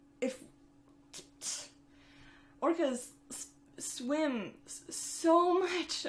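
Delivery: very slow, high, broken stutter. Speaker gets emotional talking about a documentary, stuttering. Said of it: "I'm stuttering because I cannot handle it".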